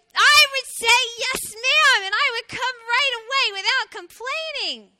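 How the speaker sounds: perky, very high-pitched and very loud. Narrator reads the little hedgehog answering its mother's question, loud voice. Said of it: "perked up and said with a loud voice".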